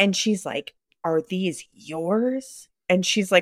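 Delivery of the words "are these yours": mock really mad, pointed tone, drawn-out "yours". Retelling an older woman's question at the door: imitating an angry neighbor. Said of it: "all mad".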